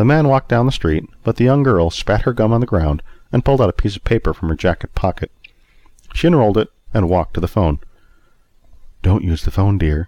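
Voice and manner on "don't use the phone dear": sweet-voiced delivery. Beatrice speaks to a young girl at the phone, in a sweet voice. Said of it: "Beatrice said in a sweet voice".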